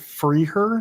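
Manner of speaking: ordinary delivery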